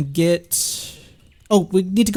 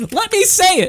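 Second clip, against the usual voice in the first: very high, shrill, exasperated, frustrated yell; 12 semitones higher than usual. Player whose chat message will not send, frustrated outburst. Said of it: "frustrated at chat not sending".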